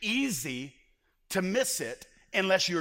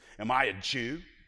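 voice full of disgust, scornful; 6 semitones lower than usual. Reading Pilate's reply to Jesus aloud: Pilate's voice with put-on disgust. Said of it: "disgust in his voice".

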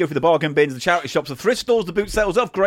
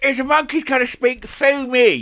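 higher, louder mocking impression. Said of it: "you're doing an impression".

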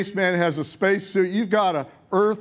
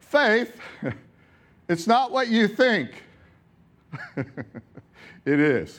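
slow, purposeful, deliberate pause after the word "faith". Giving the morning's message, pause after faith. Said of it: "I pause there, purposeful pause".

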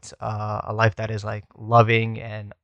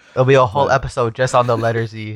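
usual speaking voice

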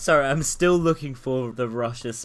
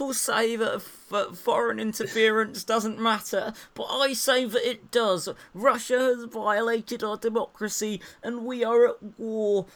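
high-pitched oratorical politician voice; 9 semitones higher than usual. Reading out tweets in an angry rant: Mike Gapes impression. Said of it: "your impression of him".

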